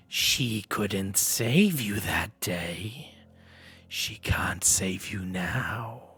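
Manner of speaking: huge creature voice filling the room. Narrator voicing a creature whose voice fills the room, voice filling the room. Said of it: "this creature's voice uh, fills the room, um, and it says".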